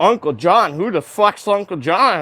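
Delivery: thrown, flustered, caught-off-guard tone. Retelling a chat where the other person got flustered: imitating flustered Pat King. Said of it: "he went fucking flustered".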